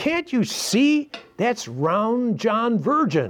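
put-on high, slow, sighing, fed-up, exasperated little-girl voice. Retelling a joke, quoting a little girl impatient with her mother: imitating a frustrated little girl. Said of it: "the little girl sighed frustration".

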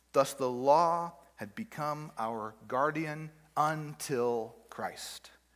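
very slow, deliberate, word-by-word reading. Speaker reads an important verse aloud to listeners, slowly. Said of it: "I'm going to read it slowly to you".

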